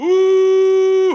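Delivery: very high, loud, long, mournful horn hoot.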